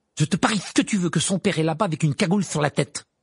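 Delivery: heated, angry, flaring outburst. Narrator reading Ron's remark to Harry and Hermione, flaring up angrily. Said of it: "s'emporta Ron".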